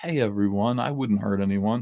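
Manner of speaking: mild, gentle, harmless-sounding tone. Showing his own soft-spoken way of talking, soft-spoken voice. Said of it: "that's my soft spoken kind of like".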